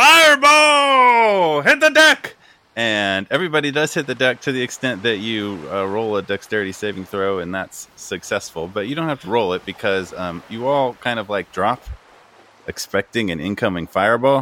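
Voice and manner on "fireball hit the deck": very high, very slow, drawn-out shouted yell. Voicing the lookout warning everyone of an incoming fireball: lookout yelling a warning. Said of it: "the lookout from the top yells out".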